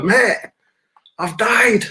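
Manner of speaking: put-on shouting. Retelling being in an ambulance, shouting to the driver: imitating own past shouting. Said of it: "So I'm shouting to the driver".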